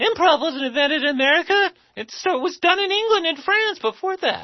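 shrill, very high-pitched, loud voice. Quoting the wife's objection on where improv began: imitating Catherine. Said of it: "I'm gonna do my impression of her".

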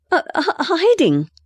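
stammering, pitched way up, very high. A girl caught hiding in a woman's house answers her; stammering. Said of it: "stammered the girl".

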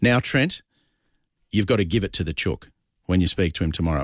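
imitated voice, said sternly. Retelling what a colleague said about the next guest: imitating Michael's stern voice. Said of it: "in a very stern voice that you can picture Michael using".

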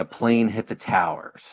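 normal talking voice

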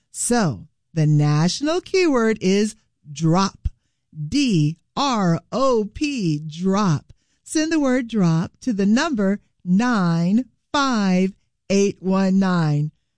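carefully paced speech. Host giving listeners a text keyword and number, slow and deliberate. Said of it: "Did I slow it down enough for you?".

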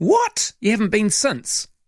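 mock surprise. Reacting to someone who hasn't been to the movies since the 90s: mock shock. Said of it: "I don't know why I sound so surprised. It was like mock shock".

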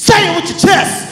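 loud, slow, high-pitched bellow. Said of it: "that's what he said to me".

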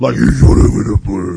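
loud, matter-of-fact, pragmatic tone.

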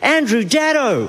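put-on excited, high call. Retelling how a stranger in the street called out: imitating an excited stranger. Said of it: "a guy pointed excitedly to me and went".

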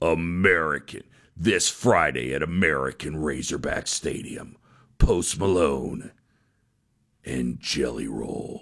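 big, very low, monstrous disembodied announcer voice. Pitching a stadium name, the speaker does a big, monstrous disembodied voice. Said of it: "the disembodied voice guy with the really big".

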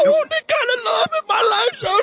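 high, wailing, slobbering sob.

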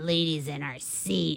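put-on gravelly rude voice. Retelling what a rude man said on coming in: imitating a rude gravelly voice. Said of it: "all super gravelly".

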